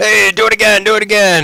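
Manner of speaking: very high-pitched, loud shout. Voicing a creature heard through a door: shouting. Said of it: "and then shouts".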